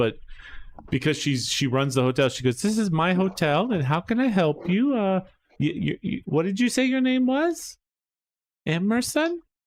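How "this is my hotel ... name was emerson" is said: higher-pitched voice speaking halting broken English. Playing a lady who runs a hotel, greeting a guest, in Petrolina's broken English. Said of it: "it's broken English".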